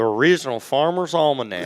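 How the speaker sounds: country East Texas accent. Reading a book title aloud when asked: East Texas voice. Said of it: "in your best East Texas voice".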